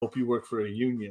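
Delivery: threatening whisper. Leaning in to an enemy in the game: menacing whisper. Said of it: "I'm gonna kinda whisper to him".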